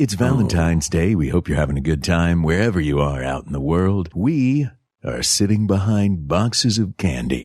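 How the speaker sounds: silky, smooth, low late-night radio DJ voice. A host greeting listeners on valentine's day: smooth radio dj voice. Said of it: "I'm going to talk like a smooth radio D J".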